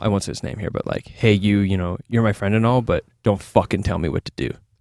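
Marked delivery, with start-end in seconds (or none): 1.1-4.5 very serious, grave tone. Retelling own words said to a friend's face: imitating own very serious tone. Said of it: "very serious".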